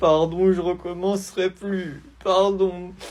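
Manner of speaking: put-on crying kid voice. In a sketch, after being told he'll be punished at home, the boy answers, crying. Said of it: "arrête de pleurer".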